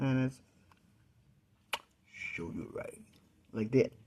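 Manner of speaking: deep, breathy voice dropped an octave. Speaker apologizing for how their early-morning voice sounds: voice down an octave. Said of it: "my voice is down an octave".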